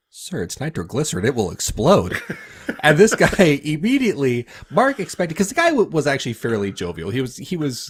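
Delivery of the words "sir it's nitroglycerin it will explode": dead serious, bone-dry deadpan delivery. Retelling how a man answered his chest pain patient; retelling a deadpan line. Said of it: "Mark deadpan stares his chest pain patient in the face and says".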